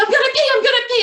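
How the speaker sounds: put-on very high, panicked, rattled-off child-like screaming. Telling a story about a scared boy in his mom's car, imitating a scared scream. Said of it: "he's so scared and he's screaming".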